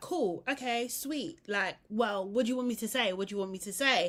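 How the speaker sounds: terse, short, one-word, upset replies. Retelling a contestant's short answers to bad news: imitating someone visibly upset. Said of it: "obviously visibly upset".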